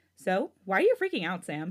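plain

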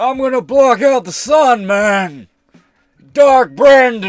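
very high, very loud, shrill bellowing villain voice. Wondering aloud how an evil version would sound, then trying it: evil Joe Biden voice. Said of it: "that's not a bad Biden impression".

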